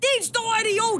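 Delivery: very high-pitched shout. A mother retelling shouting at a driver who cut in front of her, mock-shouting. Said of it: "og jeg råber".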